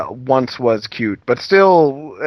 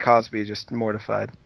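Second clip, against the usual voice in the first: usual speaking voice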